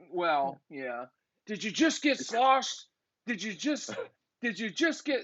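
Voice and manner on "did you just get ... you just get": imitated screaming, shouted, higher pitch. Retelling how the angry coach yelled at the team: imitating coach screaming. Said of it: "he just kept screaming it at us".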